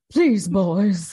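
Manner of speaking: sad, wobbling, donkey-like voice. Repeating the voice on request: wobbly, mock-sad Charles voice. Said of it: "It's got a little bit of like a wobbly, sad donkey to it".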